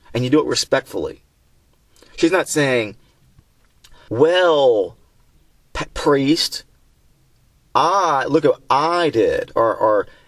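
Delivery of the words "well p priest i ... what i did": very slow, condescending, talking-down tone. Acting out how the woman might have talked down to the priest: acting out a condescending tone. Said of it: "with that kind of condescending tone of voice".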